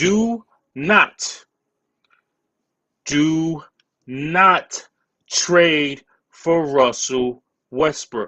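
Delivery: very slow, word by word. Speaker directly addressing the Knicks, saying this very, very slowly. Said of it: "I'm gonna say this very, very slowly".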